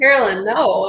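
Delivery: normal talking voice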